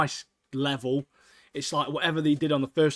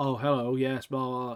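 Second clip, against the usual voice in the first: flat monotone with no pitch variation. Mocking Adult Swim voice acting as boring, in Adult Swim monotone voice. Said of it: "They're all quite monotone".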